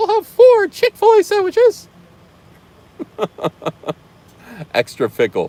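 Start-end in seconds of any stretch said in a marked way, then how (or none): 0.0-1.9 squeaked out, high pitched and swooping. Speaker placing a food order in a Mickey Mouse voice. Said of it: "order in my Mickey Mouse voice".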